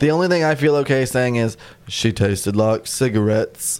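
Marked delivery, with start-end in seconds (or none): 1.9-3.8 put-on American Southern accent. Quoting the movie line in the same way: Southern accent. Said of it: "that's just a Southern accent".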